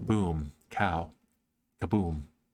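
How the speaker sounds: calm, low public-radio announcer voice. Saying boom, pow, kaboom calmly, the speaker uses a calm NPR voice. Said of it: "my N P R voice".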